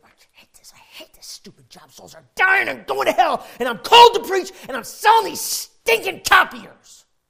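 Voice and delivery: mad, frustrated yell, very loud and high-pitched. Retelling himself driving to work, re-enacting his own mad yelling. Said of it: "Literally yelling, so mad, so frustrated".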